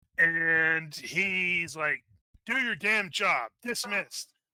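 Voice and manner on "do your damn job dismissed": loud, furious high-pitched shout. A captain answers a guard asking about exceptions to his orders: yelling. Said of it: "so he's yelling at you".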